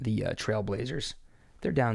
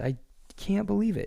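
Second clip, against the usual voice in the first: talking through laughter, very high; 10 semitones higher than usual. Talking about a basketball game, still laughing while talking. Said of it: "I'm still laughing about the Clippers".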